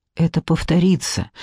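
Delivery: ordinary delivery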